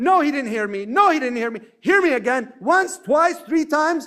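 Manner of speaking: voice climbing with each repeat. Showing how someone raises their voice to be heard in a conversation: raising voice higher and higher. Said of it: "So I raise my voice higher and higher and higher".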